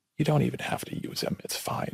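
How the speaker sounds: hushed, breathy, soft whisper. Telling about a hired stunt man, the speaker retells a whisper said to him. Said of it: "McCallum just kind of whispers to me".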